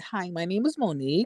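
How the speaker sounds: polished, preppy voice. Retelling how a caller first spoke: imitating monique's preppy voice. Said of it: "Monique's whole, like, voice when you talk to her".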